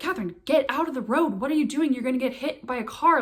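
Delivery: put-on, mild half-yelling voice. Retelling a companion calling from beside a highway: imitating someone yelling. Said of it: "kinda yelling at me".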